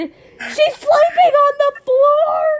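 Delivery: very high, loud, drawn-out mock angry dad voice. Retelling what a dad said about a sleeping arrangement: imitating an angry dad. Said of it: "he got so angry".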